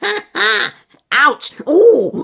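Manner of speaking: very high, very loud, shrill squeal. Narrator reading the weasel crying out as the bear treads on him, squeaked. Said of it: "squeaked Wily Weasel".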